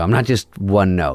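normal talking voice

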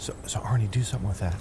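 whispered softly under the breath.

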